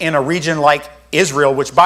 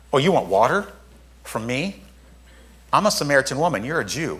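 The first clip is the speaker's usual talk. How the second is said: sarcastic, faintly snide, snarky, a bit soft; 7 dB quieter than usual. Imagining how the Samaritan woman might have answered: mock-snarky tone. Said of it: "she might have said it with a little bit of a snarky".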